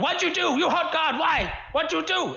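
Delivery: very high, shrill, furious screeching yell. Narrating a game scene as Quillib turns on a player; Quillib yelling. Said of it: "Quillib starts yelling at you".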